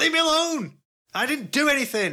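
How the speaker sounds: very high-pitched, drawn-out, panicked near-breakdown voice. A tabletop player's character turns to face whoever tried to grab them; Volley's panicked outburst. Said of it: "Volley almost has, like, a little breakdown".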